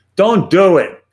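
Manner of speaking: loud put-on Brooklyn accent. Summing up what dental and orthopedic organizations advise, speaker uses best brooklyn accent. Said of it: "in my best Brooklyn accent".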